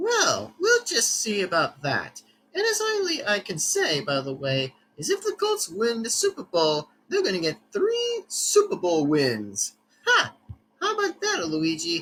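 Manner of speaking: high, swooping, sing-song, gloating, boastful put-on voice. In a parody debate about NFL teams, Mario answers Luigi, Mario voice. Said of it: "[name], [name], [name]'s Favorite NFL Teams Debate (Parody Video) (Part 1 to Part 4) (Full Version) (uploaded 2025) / [name], [name], [name]'s Favorite NFL Teams Debate (Parody Video) (Part 1 to Part".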